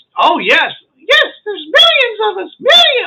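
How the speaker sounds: very high, squeaky, swooping little squeak. Telling a story, voicing a character's reply, in a squeaky Mickey Mouse voice. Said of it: "Why is he so squeaky?".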